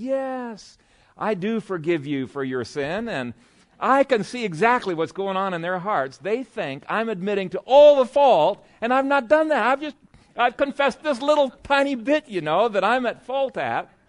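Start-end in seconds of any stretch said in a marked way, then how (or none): 0.0-3.1 acted gracious, forgiving tone, slow and drawn out. Retelling how the other person answered a confession: imitating a gracious reply. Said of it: "they'd be so gracious".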